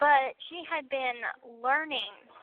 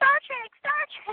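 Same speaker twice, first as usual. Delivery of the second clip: put-on, eager, blurted, very high excited yell; 13 semitones higher, 5 dB louder than usual. Retelling blurting out a quiz answer, the speaker acts out an excited scream. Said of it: "I didn't mean to like scream it".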